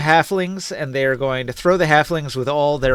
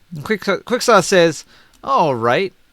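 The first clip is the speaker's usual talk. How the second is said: ordinary delivery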